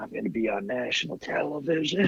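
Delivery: acted dazed, stoned, soft, slightly high musing voice. Describing getting big news while high, the speaker acts it out: imitating a stoned voice. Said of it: "you're like stoned".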